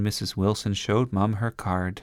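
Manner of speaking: ordinary delivery, nothing marked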